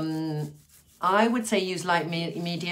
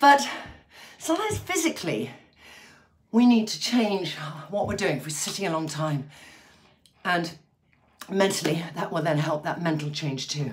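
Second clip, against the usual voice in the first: breathless, out of breath, winded. Addressing viewers, a speaker talks while out of breath. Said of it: "I'm just feeling out of breath".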